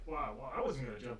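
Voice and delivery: plain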